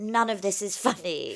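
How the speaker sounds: stronger put-on British accent. Retelling own childhood reaction to cartoons: imitating younger self, more British accent. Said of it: "I sounded even more British".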